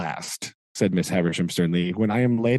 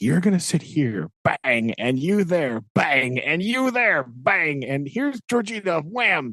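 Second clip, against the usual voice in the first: mock agitated, insistent ranting, pitched high; 6 semitones higher than usual. Retelling a scene where Miss Havisham gets upset and bangs the table: imitating upset Miss Havisham. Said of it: "gets all upset and she starts, like, banging on the table".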